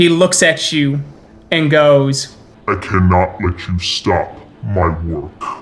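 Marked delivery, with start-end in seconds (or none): 2.7-5.6 very low, deep, guttural voice. The Shadow Lord looks at you and speaks, in a guttural Shadow Lord voice. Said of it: "he says in his guttural, Krynos voice".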